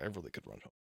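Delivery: very low, hushed, grumbling mumble under the breath. Retelling muttering while stuck in traffic: imitating muttering under breath. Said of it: "under my breath".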